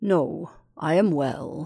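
feeble, weak, low, very slow voice. A man the narrator asks about being sick answers, feeble answer. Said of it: "he feebly answered".

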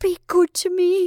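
very high cried-out voice. A frantic woman clinging to the man she loves speaks to him, crying out. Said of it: "she cried".

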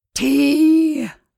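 husky voice with heaving breaths. A man leaning against the wall calls out, husky, heaving voice. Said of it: "heaving like an overloaded horse in a husky voice".

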